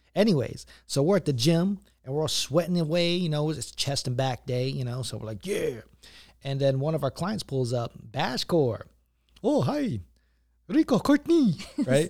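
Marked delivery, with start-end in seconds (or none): 9.4-12.0 put-on Filipino accent, very high and loud. Retelling how a client pulled up at the gym, imitating Bashcor, Filipino-sounding accent. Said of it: "That was a Filipino accent".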